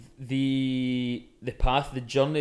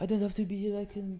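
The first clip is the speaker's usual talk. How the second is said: put-on soft, slightly higher-pitched English with French accent; 8 semitones higher, 5 dB quieter than usual. Quoting a man who was asked to produce the session, in a French accent. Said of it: "That was actually really good".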